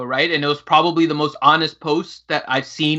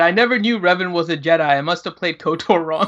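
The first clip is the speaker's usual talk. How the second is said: ordinary talk, nothing marked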